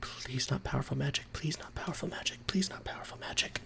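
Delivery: hushed, whispered, under-the-breath muttering. Voicing a character who mutters a plea under his breath: muttering under breath. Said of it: "muttering under his breath".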